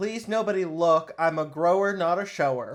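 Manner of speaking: very loud shout at the top of the lungs. Describing what a man does when he must take his pants off, imitating someone shouting. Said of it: "he's shouting at the top of his lungs".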